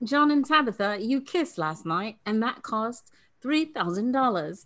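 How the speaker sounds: really bad, fake British accent. Retelling what a British woman told John and Tabitha, in a really horrible British accent. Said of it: "my really horrible British accent".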